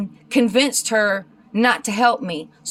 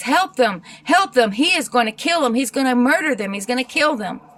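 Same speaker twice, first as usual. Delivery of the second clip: put-on frantic pleading woman's voice, faster; 2 semitones higher than usual. A storyteller quoting a woman who came up to his car; imitating a frantic woman. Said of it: "And she's frantic".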